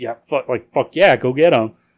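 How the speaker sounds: ordinary delivery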